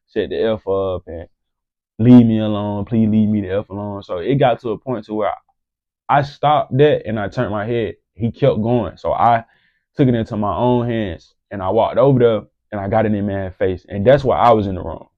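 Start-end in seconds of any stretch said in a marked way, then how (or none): none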